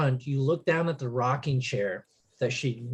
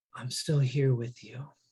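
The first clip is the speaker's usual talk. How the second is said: very soft, faint, distant-sounding voice; 4 dB quieter than usual. Narrating the game, a voice in the player's head as they squeeze a totem: very soft. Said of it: "you hear a very soft voice".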